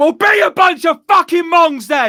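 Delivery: play-acted shrill, high, snapped outburst. Retelling words to a driver blocking the junction: imitating snapping angrily. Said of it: "that's when I snapped".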